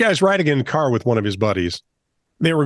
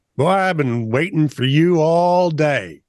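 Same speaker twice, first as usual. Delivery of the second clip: put-on country accent, pitched up; 5 semitones higher than usual. Retelling a patrol officer at the car window greeting the driver, country accent. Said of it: "says in a country accent with a grin on his face".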